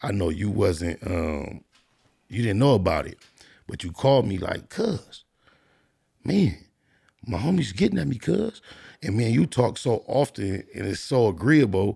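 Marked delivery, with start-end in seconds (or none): 4.7-8.6 intense, worked-up, pitched-up tone. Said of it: "When you call me with this tone of voice".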